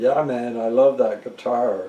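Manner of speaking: heavily sarcastic voice. Retelling what a man said about the speaker's guitar, imitating a sarcastic tone. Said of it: "really sarcastically".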